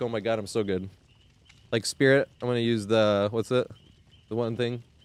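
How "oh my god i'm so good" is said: mock sarcastic boastful tone, quieter. Joking about always running strong add-ons: put-on sarcastic tone. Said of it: "sarcastically be like".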